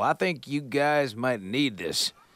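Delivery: lazy Texas drawl, half-called out. Reading liner notes about a fan throwing a pistol onstage: imitating a hollering texan drawl. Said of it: "hollering in his Texan drawl".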